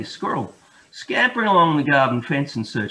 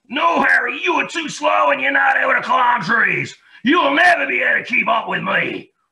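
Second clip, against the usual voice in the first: sharp, snappy, very high-pitched, loud squeal; 11 semitones higher, 5 dB louder than usual. Reading a children's story, the squirrel snaps back at Harry: snappy Sammy the Grey Squirrel voice. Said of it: "replied Sammy in a sharp, snappy voice".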